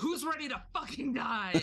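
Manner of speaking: acted in-character shout. Declaring an in-character battle cry at three robed cultists: in-character yell. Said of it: "I'm gonna yell".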